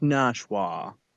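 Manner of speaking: mock-posh, well-to-do pronunciation. Showing how a well-to-do person says the town name: mock-posh pronunciation. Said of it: "like a well-to-do, like with your pinkies out".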